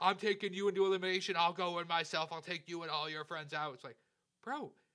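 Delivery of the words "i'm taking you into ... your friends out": mock raging, furious screaming. Retelling a reality show contestant's threat: imitating someone screaming. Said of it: "he's screaming at her like".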